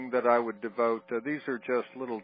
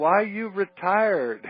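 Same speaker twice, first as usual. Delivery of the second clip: put-on slow, loud, drawn-out Cuban accent. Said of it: "In this Cuban accent".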